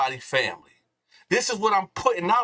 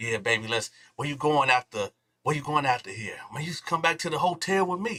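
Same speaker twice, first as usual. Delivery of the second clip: put-on devilish whisper; 4 semitones lower, 4 dB quieter than usual. Retelling what he whispered in a woman's ear leaving the club, retelling a devilish whisper. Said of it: "I'm whispering in whisper, whispering in her ear, right? Like the devil".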